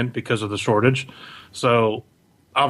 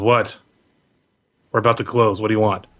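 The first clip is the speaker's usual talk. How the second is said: impatient, curt voice; 3 semitones lower than usual. Voicing a half-elf shopkeeper about to close: impatient half-elf shopkeeper. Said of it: "there's a half elf there reading a book, and he looks up at you and goes".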